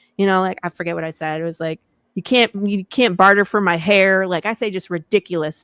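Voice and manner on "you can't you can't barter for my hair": put-on, in-character cowboy accent. Retelling talking to people at a convention table in character: put-on apocalypse cowboy accent. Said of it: "I put the whole apocalypse cowboy on and I talk to people with an accent".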